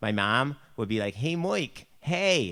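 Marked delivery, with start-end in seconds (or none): 1.1-2.5 put-on Buffalo accent. Showing how mom would talk: imitating mom's Buffalo accent. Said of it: "That's just our accent".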